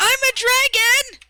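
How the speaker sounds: very loud, high, shrill, delighted gleeful shriek. Declaring that your character breathes fire at that thing, you shout: gleeful yell. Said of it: "I'm going to yell gleefully".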